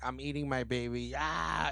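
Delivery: play-acted tragic wailing scream. Describing a scene, acting out what a woman screams: retelling a scream. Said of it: "she screams".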